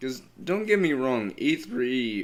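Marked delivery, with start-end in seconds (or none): 1.4-2.2 voice breaking and cracking on "E three". Talking about e three on a video, voice cracking. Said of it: "pardon the voice crack".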